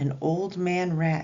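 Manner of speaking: ordinary delivery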